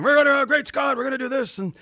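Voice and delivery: very high-pitched put-on scientist character voice. Imitating the Back to the Future ride while out driving, do a Doc Brown voice. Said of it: "I would just basically do like a Doc Brown".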